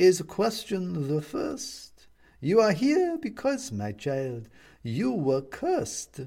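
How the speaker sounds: creaky, warm witch voice. Reading a story aloud, voicing the witch as she answers the one she cursed, creaky but warm. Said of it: "whose voice is creaky but warm like old wood".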